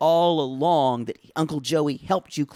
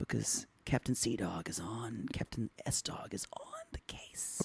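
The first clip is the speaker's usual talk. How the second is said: very quiet, slow, breathy whisper close to the ear; 6 semitones lower, 16 dB quieter than usual. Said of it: "I'm gonna whisper in your ear".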